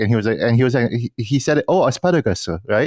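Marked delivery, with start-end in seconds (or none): 1.7-2.9 put-on Korean-accented pronunciation. Retelling how an American man ordered at a steak dinner place, Korean-accented pronunciation. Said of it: "why the fuck are you saying it like that?".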